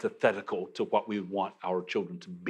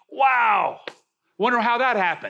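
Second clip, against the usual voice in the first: high, loud mock amazed wonder. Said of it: "and saying".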